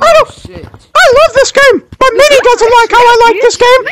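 put-on cartoon mouse voice. Playing an online game with others: Mickey Mouse voice. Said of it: "Mickey Mouse".

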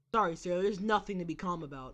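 usual speaking voice

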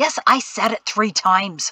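ordinary delivery

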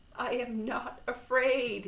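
high, very slow, drawn-out cry. Narrator reading Toad's reply as a snake comes out of a cave; cried out. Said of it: "he cried".

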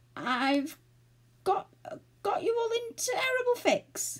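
very high quaver, halting, breaking mid-phrase. Unable to find the hole, he admits it to the others, trembling voice. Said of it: "he said in a trembling voice".

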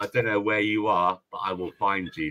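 low, quiet, menacing voice. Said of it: "like Liam Nielsen I was".

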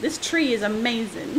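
plain

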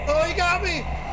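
panicked screaming, high, loud, despairing.

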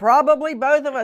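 high, loud, yelled-out voice. Retelling a woman's reply to her brother-in-law, yelling. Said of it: "And she like yells it".

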